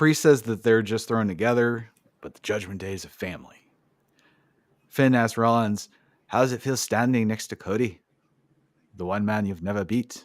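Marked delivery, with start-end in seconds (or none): 6.3-10.2 put-on Irish accent. Quoting Finn asking Rollins a question: attempted Irish accent as Finn. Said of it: "I need to quit trying to do the Irish accent".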